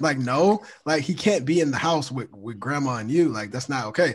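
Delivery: ordinary delivery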